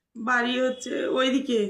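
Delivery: crying, slow and tearful.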